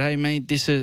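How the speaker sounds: ordinary delivery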